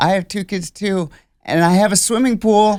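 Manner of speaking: mock, abrupt, sudden, high-pitched, loud blurt. Retelling a woman speaking to a man as he walks away, imitating a sudden blurt. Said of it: "She just blurts out".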